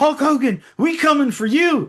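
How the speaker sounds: very loud, high-pitched, drawn-out call. Quoting a wrestling broadcast line to friends: Booker T impression. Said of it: "that's Booker T".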